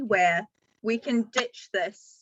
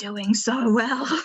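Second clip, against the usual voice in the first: hushed, whispered. During a tabletop game, a player's character speaks to another character, whispering. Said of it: "sort of whispers to Alexei".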